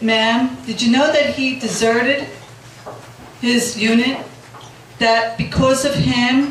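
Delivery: plain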